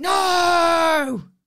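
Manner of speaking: furious no, very loud, very high, shrill, drawn out. Retelling a friend's angry reply: imitating a fuming friend. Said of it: "Fuming about it".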